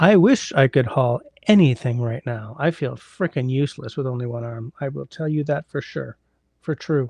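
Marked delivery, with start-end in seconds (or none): none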